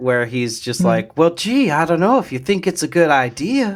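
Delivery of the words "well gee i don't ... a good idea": higher, innocent, naive aw-shucks tone. Describing how Shigeharu talks: imitating Shigeharu's innocent voice. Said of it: "kind of innocent-esque".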